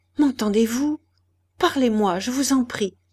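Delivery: quavering, unsteady voice. A man leans over a dying woman and pleads with her, in a trembling voice. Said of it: "d'une voix tremblante".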